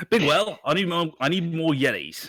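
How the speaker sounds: terrible fake Australian accent. Imagining what a Yeti-breeding man would say, in a shitty Australian accent. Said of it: "that was a shitty Australian accent".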